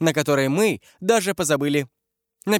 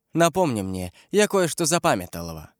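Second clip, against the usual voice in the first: ordinary delivery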